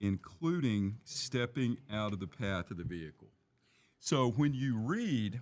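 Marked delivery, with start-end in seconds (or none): 0.0-3.3 very slow, deliberate word-by-word reading. Reading a policy passage aloud to someone in the discussion, very slowly. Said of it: "I'm going to read this very slowly".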